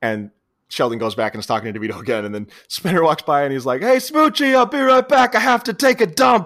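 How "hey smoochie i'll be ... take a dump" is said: very high, loud, shrill acted-out holler. Retelling a movie scene where a character yells across a restaurant: imitating a yell. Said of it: "Yells it across this fancy restaurant".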